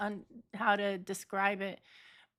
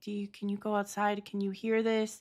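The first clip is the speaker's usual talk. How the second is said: acted-out, panicked, pleading voice. Retelling what they asked their mom that night, retelling own panicked plea. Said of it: "literally sound like, literally panicking".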